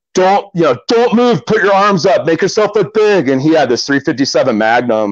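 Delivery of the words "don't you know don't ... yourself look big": mock yelling, higher pitch. Retelling a close bear encounter, imitating the guide yelling. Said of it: "yelled at me".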